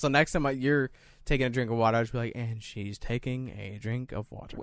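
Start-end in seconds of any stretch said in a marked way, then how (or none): 2.4-4.6 hushed golf broadcast commentator narration voice. Showing how you'll narrate her next drink of water, in golf narration voice. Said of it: "In the golf narration voice".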